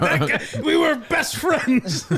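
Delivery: mock very high-pitched, slow, drawn-out angry voice. Retelling how Clemmer complained about a friend: imitating Clemmer angry. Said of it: "Clemmer was very angry at him".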